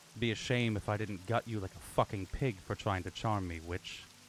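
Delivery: hushed, whispered voice. Voicing a character who pulls someone close and threatens them: whispering. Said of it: "it's kind of a whisper".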